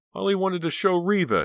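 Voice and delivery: very high-pitched screaming cry. Rob, led away by officers, turns his head back toward Pam, screamed. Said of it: "he screamed".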